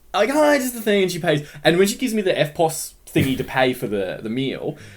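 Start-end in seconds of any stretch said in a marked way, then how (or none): 0.1-1.0 very high, gushing, bubbly, over-the-top happy chirp. Retelling the woman at the window, imitating her bubbly over-the-top happiness. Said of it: "She's really bubbly and like she sounded really happy".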